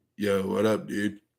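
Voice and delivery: laid-back Californian skateboarder-dude accent. Taking a request to do an accent, using a Californian skateboarder accent. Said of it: "Do a skateboarder Californian accent".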